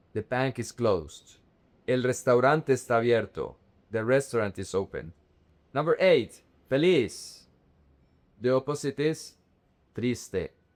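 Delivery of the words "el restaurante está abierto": ordinary delivery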